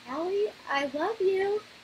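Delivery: really high, piping, drawn-out little voice. Retelling how Mari walked up to her and spoke; imitating Mari's high-pitched voice. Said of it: "he had this like really high, chipped, uh, high pitched voice".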